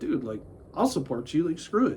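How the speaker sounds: plain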